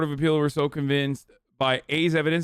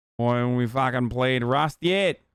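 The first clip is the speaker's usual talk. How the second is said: put-on Australian accent; 3 semitones lower than usual. Speaker voices what chat is asking, in a put-on Australian accent. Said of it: "I should stop this Australian accent now".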